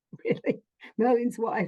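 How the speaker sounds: acted, high-pitched, amused disbelief spoken through laughter. Retelling getting a message, the speaker acts out their own past self laughing. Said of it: "And I was like laughing".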